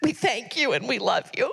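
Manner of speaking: weeping, tearful, crying through the words. Honoring the pastor at his birthday celebration, crying while speaking. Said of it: "I'm crying".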